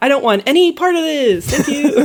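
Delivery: cheerful, breezy, bright and upbeat polite tone. Retelling how Henri rejects the occult girl: imitating Henri's upbeat tone. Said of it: "in that very, like, upbeat tone".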